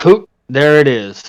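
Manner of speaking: muttering a spell-like incantation, kind of loudly. A character mutters words to a mourning veil, loud muttering. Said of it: "he mutters some words to it, kind of loudly".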